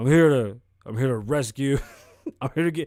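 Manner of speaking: put-on deep voice. Imagining a bounty hunter rolling up at the door: imitating Dog the Bounty Hunter, deep voiced. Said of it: "All deep voiced and shit".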